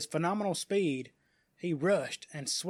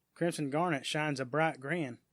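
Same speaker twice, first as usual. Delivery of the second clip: ordinary talk, nothing marked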